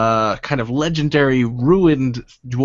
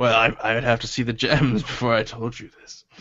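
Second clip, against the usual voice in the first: put-on drunk voice, quieter; 4 dB quieter than usual. Voicing a drunk character who bargains over gems for information; acting drunk. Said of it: "He's drunk".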